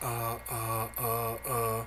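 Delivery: low, soft, very slow, drawn-out halting uhs. Ranting at Trudeau, the speaker mocks the way he talks: Trudeau impression, halting uhs. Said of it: "you sound like a bitch when you talk like this".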